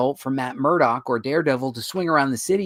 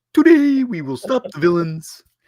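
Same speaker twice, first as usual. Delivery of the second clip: big, loud, high-pitched cartoon character voice; 5 semitones higher, 6 dB louder than usual. Suggesting a twist on how Batman could talk, Bullwinkle voice. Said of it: "I would do it like Bullwinkle and be like".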